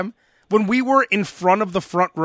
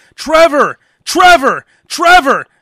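very loud, high-pitched hollering yell; 7 semitones higher, 8 dB louder than usual. Retelling a girl yelling to her drunk boyfriend: imitating a woman yelling. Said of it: "she was yelling to her drunk boyfriend".

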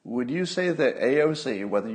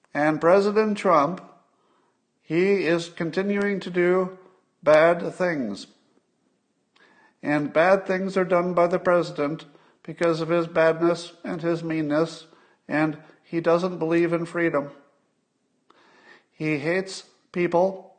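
insincere, pitched-up reading with no conviction; 6 semitones higher than usual. Showing how bad a public speaker he is, giving a public statement, Chuck Schumer impression. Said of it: "Let me give you an impression of Chuck Schumer giving a public statement".

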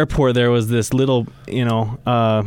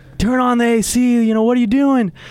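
put-on panicked shouting, very high-pitched; 11 semitones higher than usual. Recalling starting to panic in the heat, retelling a shout. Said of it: "I'm starting to shout like".

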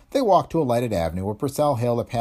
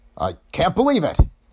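high, gasped-out words; 8 semitones higher than usual. Purcell returns and fixes his gaze on the secret agent; gasped. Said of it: "he gasped".

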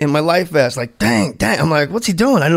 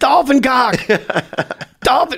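mock, high-pitched, hollered yell; 8 semitones higher than usual. Retelling floating alone in the water with a dolphin, retelling a yell. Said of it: "I start yelling".

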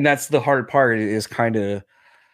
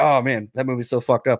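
plain

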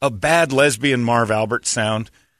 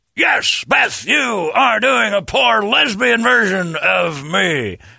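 slow, creaky, rough, drawn-out TV announcer call; 8 semitones higher than usual. Answering a request to put the announcer and Marv Albert together: Marv Albert voice. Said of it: "Put she and Marv Albert together".

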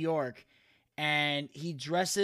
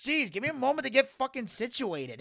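swooping, pitched-up put-on cartoon dad voice; 8 semitones higher than usual. Retelling a man onlookers want to do Peter Griffin, in Peter Griffin voice. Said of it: "But he's in the voice".

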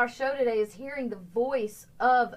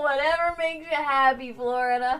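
louder, put-on, indifferent shrugging voice. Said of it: "I was like".

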